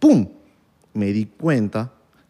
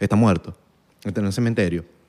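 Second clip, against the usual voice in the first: mock icy, unbothered, cold, matter-of-fact tone; 5 semitones lower, 3 dB quieter than usual. Retelling own reply to people asking about one's father: imitating a cold reply. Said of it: "Y yo digo así fríamente".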